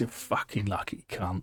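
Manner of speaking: annoyed, angry, pissed-off swearing. Voicing a character who is pissed off at a lucky player: angry, pissed off. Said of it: "she's pissed off with this".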